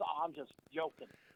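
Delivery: ordinary talk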